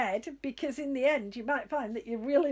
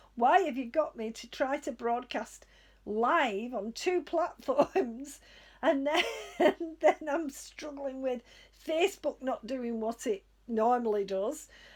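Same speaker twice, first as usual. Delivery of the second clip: ordinary talk, nothing marked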